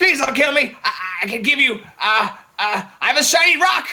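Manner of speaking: high-pitched, begging, pleading goblin voice. Voicing a beaten, trembling goblin begging not to be killed: pleading goblin voice. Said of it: "Looks like he was left here to die".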